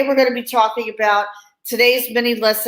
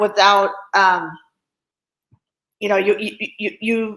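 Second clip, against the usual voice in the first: stuttering, stammering, repeating words. Speaker talking to a listener going through a life transition, stuttering. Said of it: "sorry for stuttering".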